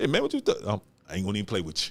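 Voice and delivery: put-on Haitian-accented speech. Joking about how Haitians talk, the speaker uses a put-on Haitian accent. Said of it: "my little accent pretty good".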